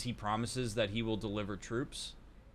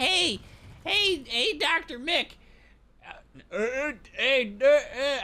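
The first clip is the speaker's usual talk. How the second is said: mocking hesitant stammering voice, higher and louder; 8 dB louder than usual. Retelling what a game character says: imitating a hesitant character. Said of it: "however he sounds".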